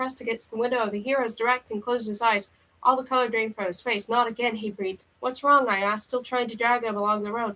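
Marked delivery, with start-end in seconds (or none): none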